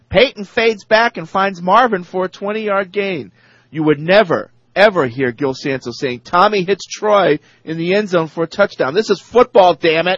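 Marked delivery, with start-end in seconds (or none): 0.1-3.3 whining, high-pitched sportscaster play-by-play voice. Complaining about the Indianapolis play-by-play guy, imitating him: whiny announcer yelling. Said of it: "a guy with his whiny voice yelling".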